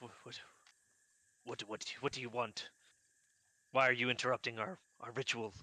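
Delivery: suddenly startled, caught off guard. Game master voices a guy startled mid-ritual by a sneaking player: startled. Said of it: "he's kind of startled and he says".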